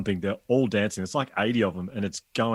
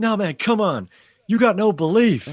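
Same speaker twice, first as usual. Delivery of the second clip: very high, drawn-out, slow, pumped-up encouraging voice; 11 semitones higher, 8 dB louder than usual. Retelling an audience member's words during a presentation: imitating a pep talk. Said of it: "they all started trying to pump me up".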